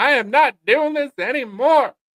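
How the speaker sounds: high, loud, slow, dying machine voice. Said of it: "It said".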